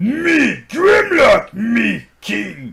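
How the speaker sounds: very high, very loud, slow, drawn-out, shrill robot-dinosaur voice. Discussing the robot mode, speaker offers his own Grimlock impression. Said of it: "Je préfère mon imitation".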